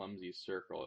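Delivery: ordinary delivery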